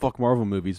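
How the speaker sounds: ordinary talk, nothing marked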